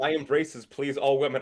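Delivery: normal talking voice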